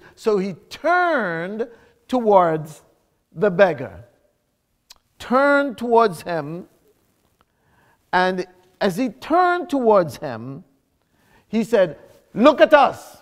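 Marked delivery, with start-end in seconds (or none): 12.4-13.0 firm, authoritative commanding voice, raised. Retelling Peter turning to speak to the beggar, in a firm, commanding voice. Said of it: "in that firm, commanding voice".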